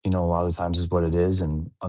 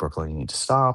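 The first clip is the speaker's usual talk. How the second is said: usual speaking voice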